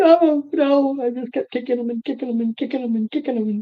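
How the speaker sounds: high, fast, frightened, panicked babble.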